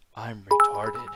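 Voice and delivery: very low, grave, solemn, dead serious delivery. Retelling how a man in an old show says a line: imitating a very serious delivery. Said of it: "he just says it so serious".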